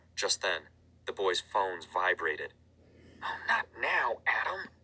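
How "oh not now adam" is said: very high, hushed, drawn-out whisper. A boy hiding in a closet reacts as his phone vibrates, whispering. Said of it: "Kurt whispered".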